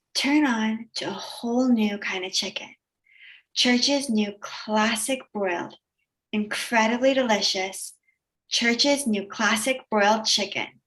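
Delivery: sexy, sultry, alluring commercial voice-over. Reading a commercial script aloud: sexy delivery. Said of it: "that was very sexy".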